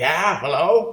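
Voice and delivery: put-on gravelly elderly smoker woman voice. Retelling Tim's phone call, an old lady answers: old lady's smoker's voice. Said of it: "this old lady answers the phone with a smoker's voice".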